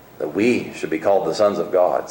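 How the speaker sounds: stress on the word "we", said low.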